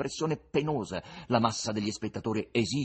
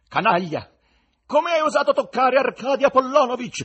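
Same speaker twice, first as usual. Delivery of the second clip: threatening, menacing, very loud and very high; 12 semitones higher, 10 dB louder than usual. A narrator reads the line of Sempleyarov's wife, standing in her box, in a menacing voice. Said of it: "chiese con voce minacciosa".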